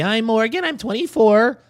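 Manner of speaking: put-on stylized young woman voice.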